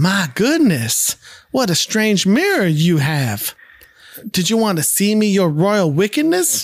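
put-on Southern US accent. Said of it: "now with a southern accent for some reason".

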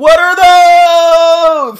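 high, loud, drawn-out yell.

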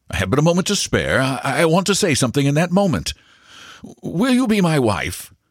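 very high, pressed pitch. Maxwell, with only a moment to spare, proposes to Miss Leslie: hurried. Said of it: "he began hurriedly".

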